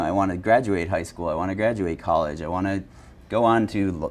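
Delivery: ordinary delivery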